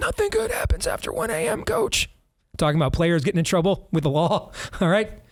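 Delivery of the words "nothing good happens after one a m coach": rough, creaky, raspy voice pitched very high. Repeat a coach's old saying about players getting in trouble, in a raspy Johnny Orr voice. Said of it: "he used to have an old saying in a raspy voice".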